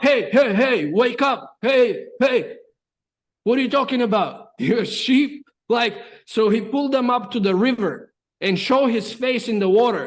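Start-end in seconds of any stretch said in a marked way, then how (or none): 0.0-5.5 mock urgent, rousing voice. Telling a story, voicing one who shakes a crying friend, retelling an urgent wake-up. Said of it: "He shook him up".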